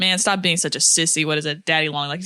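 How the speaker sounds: normal talking voice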